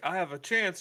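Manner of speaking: mock hopeful, high and loud cry.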